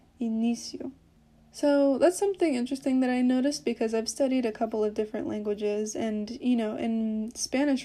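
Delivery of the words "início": início with stress on middle syllable -í-. Explaining a word's pronunciation: stress on middle syllable of início. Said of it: "you're supposed to put the most emphasis on the middle syllable".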